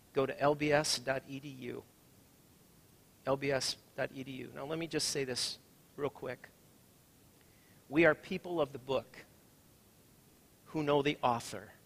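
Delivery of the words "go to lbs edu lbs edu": very slow, deliberate, spelled-out dictation pace. Repeating a web address so listeners can write it down, speaking slower. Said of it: "I'm going to say it a little bit slower".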